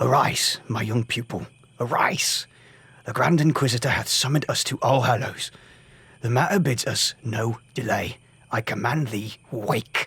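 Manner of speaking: urgent, pressing, hissed. Narrator reads the master waking his young pupil: hushed urgent hiss. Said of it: "He hissed".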